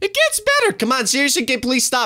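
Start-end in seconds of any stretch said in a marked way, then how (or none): 0.0-0.7 cracking voice, higher. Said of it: "My voice is cracking up fr-".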